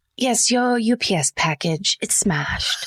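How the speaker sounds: kindly, friendly put-on British accent. In a role-play phone call to a customer, friendly british accent. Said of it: "deliver bad news in British accent".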